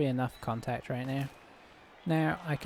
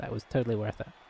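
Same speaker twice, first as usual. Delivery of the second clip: usual speaking voice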